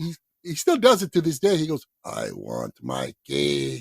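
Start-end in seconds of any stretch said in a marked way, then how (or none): 2.0-3.8 put-on very low, very slow, drawn-out Puerto Rican accent. Tell how your dad comes every Father's Day, imitating a father's Puerto Rican accent. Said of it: "in his Puerto Rican accent".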